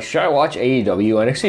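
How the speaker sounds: plain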